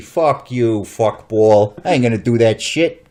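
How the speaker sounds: loud, barked, bad New York accent. Imagining the president's reply, in a bad Joe Pesci New York accent. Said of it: "Sorry for my New York accent's not very good".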